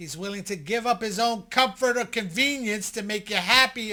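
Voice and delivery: loud, emphatic yelling.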